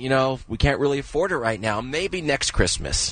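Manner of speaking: ordinary talk, nothing marked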